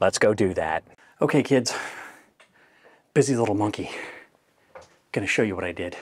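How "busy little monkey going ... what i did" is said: winded, lower and quieter. Filming a home fix-up for viewers, the speaker is out of breath. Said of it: "I'm out of breath".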